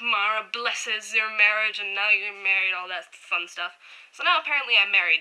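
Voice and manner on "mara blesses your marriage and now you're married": mock, put-on drunken voice. Speaker retells what a stranger claiming to be a priest said, mock drunken priest routine. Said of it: "doing this whole drunken priest routine".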